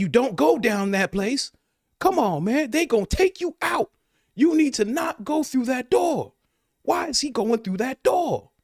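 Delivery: very high, loud hollering. Acting out a moviegoer yelling at the screen: imitating a moviegoer yelling at the screen. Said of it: "He's like".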